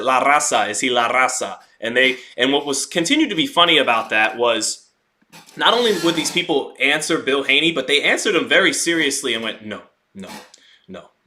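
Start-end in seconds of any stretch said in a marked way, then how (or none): 0.0-1.6 slow, deliberate, put-on Mexican Spanish accent. Retelling asking people a question, the speaker repeats it in a put-on mexican accent. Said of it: "I put the accent on there and said".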